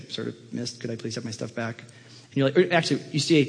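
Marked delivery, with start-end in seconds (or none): 0.0-1.8 play-acted meek, embarrassed, sheepish, low, very quiet plea. Describing missing a licence test, the speaker acts out asking for their stuff back: mock-sheepish. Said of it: "you're really sheepishly say".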